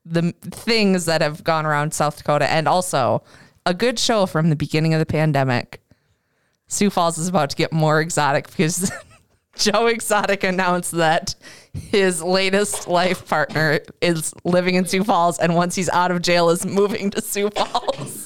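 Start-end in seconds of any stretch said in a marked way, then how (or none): 6.6-18.2 speech broken up by laughter. Sharing a news item with the other speakers, laughing while talking. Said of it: "I can't say that without laughing".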